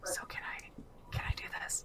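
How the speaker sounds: whispering in put-on voice. Voicing a character who asks a quiet question: whispering in character. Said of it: "Bruno's gonna whisper".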